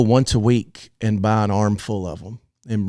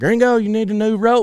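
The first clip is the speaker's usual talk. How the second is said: put-on, very loud, very high-pitched holler; 13 semitones higher than usual. Retelling what a loud-talking roper said about a rope: imitating Fred talking real loud. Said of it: "he talked real loud".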